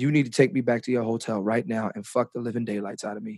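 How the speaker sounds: very quiet half-whisper, close up. Retelling what she said in his ear after a show: imitating a half-whisper. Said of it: "she whispered in my ear".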